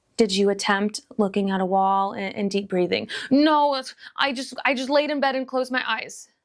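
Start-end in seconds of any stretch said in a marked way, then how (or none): 3.3-6.3 really swamped, overwhelmed, sincere, earnest tone. Describing a failed attempt to journal, acting out an overwhelmed voice. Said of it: "That's like an overwhelmed voice".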